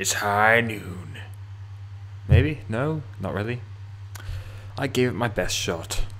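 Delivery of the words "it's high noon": impression voice, much slower. Introducing a mission called it's high noon, the speaker does an impression. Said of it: "Was that a good impression?".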